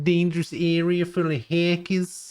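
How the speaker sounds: New Jersey accent, very high-pitched. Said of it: "like a Jersey accent".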